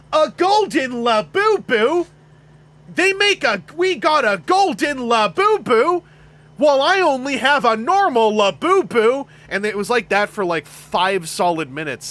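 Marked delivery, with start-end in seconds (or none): 0.1-9.2 mock influencer voice, higher, louder, slower. Speaker recalling someone overheard with a toddler watching videos, full influencer voice. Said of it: "in full influencer voice just go like".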